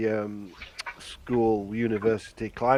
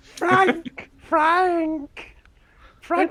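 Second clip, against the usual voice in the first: high, sinister, eerie, long drawn-out calling voice; 6 dB louder than usual. Proposing to call Frank back by impersonating Polly, in a sinister Polly voice. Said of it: "that is quite sinister".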